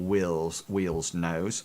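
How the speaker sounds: usual speaking voice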